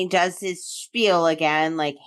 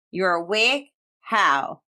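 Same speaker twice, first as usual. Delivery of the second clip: eerie, sinister, creepy villain voice. Recapping a story, quoting the surprised villain asking Rook how he's awake, mock creepy villain voice. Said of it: "and in creepy voice too".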